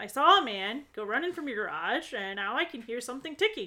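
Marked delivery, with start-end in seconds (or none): none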